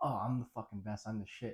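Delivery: ordinary delivery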